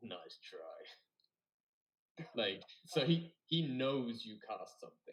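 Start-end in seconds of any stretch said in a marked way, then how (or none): 0.0-1.1 hushed, very quiet, under-the-breath muttered aside. Describing Tony reacting as you cast a spell, Tony muttering under his breath. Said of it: "he just like under his breath".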